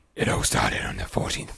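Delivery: creepy deep voice. Starting to read a story aloud after being asked for a deep, creepy voice. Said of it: "With a deep, creepy voice".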